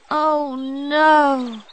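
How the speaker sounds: loud, high groan with a long stretched-out "no". Poppy's golden ball has just sunk into the pond: groaning. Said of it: "Poppy groaned".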